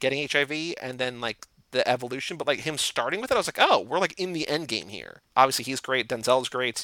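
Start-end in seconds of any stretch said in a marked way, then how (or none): none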